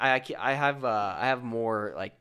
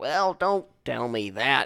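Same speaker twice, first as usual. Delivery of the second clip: put-on grandfatherly old-timer, old man voice. Describing how the speaker's grandfather talks lately, imitating an old man. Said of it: "he's acting like an old man".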